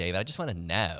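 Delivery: teasing, mocking, caricatured put-on voice. Imitating his wife during a radio ad read: imitating his wife's voice. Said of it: "Do not tell her I did that voice".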